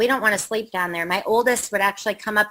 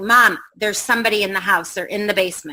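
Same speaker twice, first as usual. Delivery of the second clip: usual speaking voice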